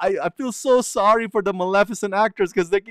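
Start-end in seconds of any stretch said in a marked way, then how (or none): none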